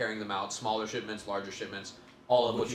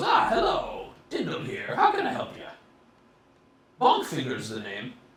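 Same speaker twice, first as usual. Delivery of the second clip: put-on loud, aged goblin character voice; 4 semitones higher, 6 dB louder than usual. Narrating a scene where an old goblin with glasses greets you: old blue goblin voice. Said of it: "a blue goblin with glasses".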